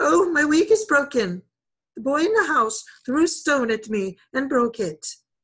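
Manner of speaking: desperate, fluttering, high, loud bird-like cry. Fluttering in front of Nagaina by the rubbish heap, she cries out. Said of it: "cried out".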